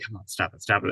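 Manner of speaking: mock muttering under breath. Recalling watching scenes between two characters, the speaker is imitating muttering under breath. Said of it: "just saying it under my breath".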